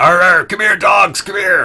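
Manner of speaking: very high, shrill, loud holler. Voicing Grumblejack charging the dogs: yelling as Grumblejack.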